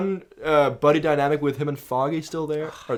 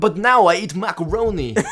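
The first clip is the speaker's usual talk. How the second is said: loud, raised, clumsy fake Russian accent; 4 semitones higher, 6 dB louder than usual. Adding a line to the other speaker's bit about a character's murder threat, Christopher Walken impression. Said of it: "That was such a Christopher Walken impression".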